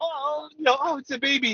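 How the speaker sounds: acted overjoyed voice, very high, slow, drawn out. Retelling how Gab reacted to the baby: imitating Gab all happy. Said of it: "Gab was all happy and he's like".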